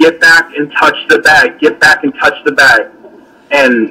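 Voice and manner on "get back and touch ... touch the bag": ordinary delivery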